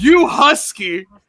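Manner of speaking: overjoyed, gleeful, delighted teasing tone. Retelling a line said to Solo Sikoa: imitating Jacob Fatu's gleeful tone. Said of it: "in the most gleeful tone I've ever heard".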